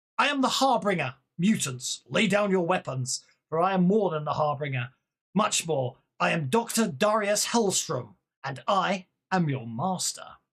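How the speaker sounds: mechanical British machine voice. Doctor Darius Hellstrom addresses the mutants from the ridge: Hellstrom's booming mechanical British voice. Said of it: "its voice booms across the ridge. Mechanical, amplified, unmistakably British".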